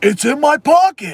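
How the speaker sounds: very high, loud goofy exclaiming voice.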